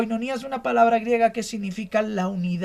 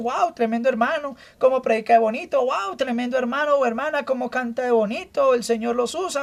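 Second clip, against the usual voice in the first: normal talking voice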